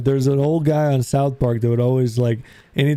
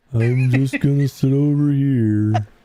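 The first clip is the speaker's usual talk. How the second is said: slow donkey voice, every word drawn out. Imitating a cartoon donkey sitting alone: Eeyore voice. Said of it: "Eeyore's like".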